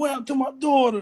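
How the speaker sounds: very high, on the verge of tears. Retelling what a man said when he was about to cry: imitating someone about to cry. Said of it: "he was about to cry and shit. You could hear in his voice".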